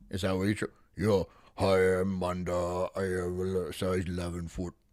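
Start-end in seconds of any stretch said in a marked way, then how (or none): 1.5-4.7 drawn-out, deep, slow put-on bass voice. Demonstrating the voice asked about, in a deep put-on voice. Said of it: "So you like talk like this?".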